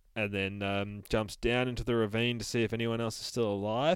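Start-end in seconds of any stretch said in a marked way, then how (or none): none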